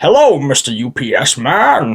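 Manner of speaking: crazy, wild, swooping voice, very slow and drawn out. Describing the supervillains in a story, doing Bane's crazy voice. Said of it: "Bane has his crazy voice like this".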